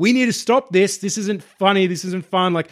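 mild, held-back scream at half strength. Recounting being shot at and pinned down, retelling a scream at full lungs. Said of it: "I am screaming at the top of my lungs".

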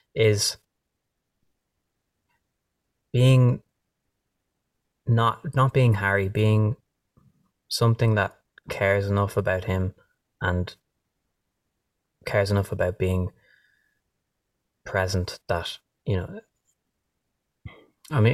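choking up. Explaining where they try to write from, choking up. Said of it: "I'm choking up on my own words here".

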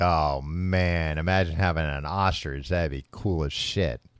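normal talking voice

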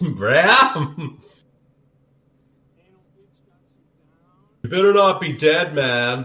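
put-on laid-back dude voice. Copying a character's line while watching, imitating the dude. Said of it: "Do I sound like the dude?".

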